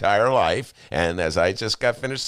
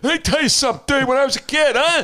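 put-on very high, loud, cranky old man voice; 6 dB louder than usual. Slipping into an inner old guy while talking about breweries: inner old guy voice. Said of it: "my inner old guy".

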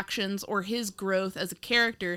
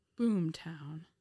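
unenthusiastic, flat, much quieter; 3 semitones lower, 8 dB quieter than usual. Podcast hosts repeat a show's title without their usual shouting, unenthusiastic. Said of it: "That's kind of the energy we're bringing today".

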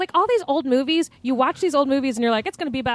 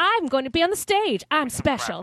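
put-on Southern accent; 2 semitones higher than usual. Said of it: "that's more Southern".

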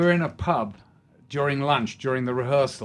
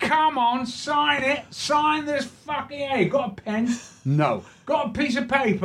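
very high, pushy Cockney chatter; 12 semitones higher than usual. Retelling a cockney man asking him to sign something, cockney accent. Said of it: "He goes".

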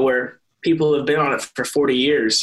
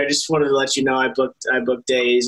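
ordinary talk

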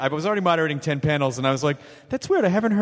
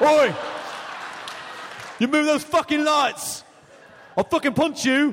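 put-on angry English accent, very high pitch; 9 semitones higher than usual. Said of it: "Good English accent".

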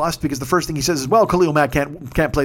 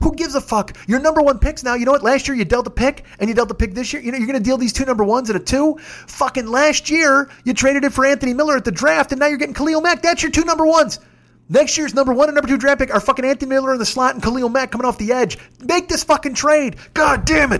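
acted-out, very high-pitched, all-out yelling; 10 semitones higher than usual. Recounting urging someone to make a football trade: retelling his own yelling. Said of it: "he's laughing at me because I'm yelling".

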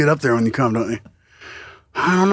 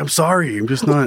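ordinary talk, nothing marked

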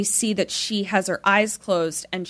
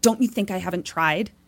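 acted, mock loud whisper-yell. Recapping a scene and acting out someone's heated reply, retelling a whisper-yell. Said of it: "whisper yelling".

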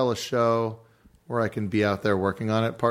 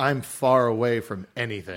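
ordinary talk

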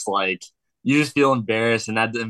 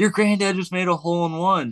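put-on high, calling yell; 9 semitones higher than usual. Retelling a childhood memory of a lady calling out to them: retelling a lady's yell. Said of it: "yells at us like".

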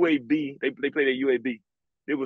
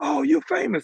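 mock, high-pitched shrieking, screaming voice; 13 semitones higher, 3 dB louder than usual. Recounting telling mom about an honorable mention: imitating mom screaming. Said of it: "My mom started screaming".

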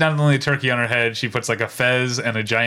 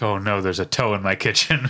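usual speaking voice

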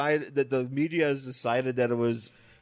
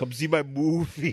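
put-on speaking with Austrian accent; 2 semitones higher than usual. Doing a movie-promotion bit: Arnold impression, Austrian accent. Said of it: "It's a really good Arnold bit".

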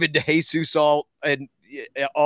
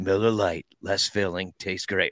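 slick, cool commercial ad-announcer voiceover; 8 semitones lower, 4 dB quieter than usual. Retelling own line from a beer commercial: cool commercial voice. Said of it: "my cool ass voice comes on and goes".

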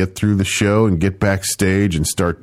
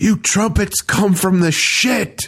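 high-pitched screaming, ranting; 12 semitones higher than usual. Retelling how he yelled at the trumpets mid-performance, imitating his screaming. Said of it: "he's screaming and going".

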